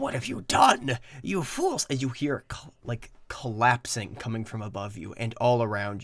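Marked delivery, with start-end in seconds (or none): 0.0-1.9 high-pitched screaming outcry. Narrating the game after the beholder dies, voicing the wizard; Xanax screaming. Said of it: "he screams".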